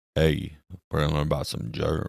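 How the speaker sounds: deep, commanding, imposing low voice. Imitating a charismatic teacher's imposing deep voice. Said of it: "his imposing deep voice".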